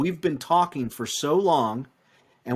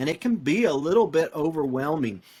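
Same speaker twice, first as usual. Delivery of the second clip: usual speaking voice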